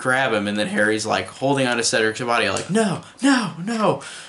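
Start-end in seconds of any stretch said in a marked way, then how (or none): 2.7-4.0 high, far-off, anguished scream. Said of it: "Harry screams".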